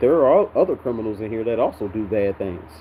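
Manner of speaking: ordinary talk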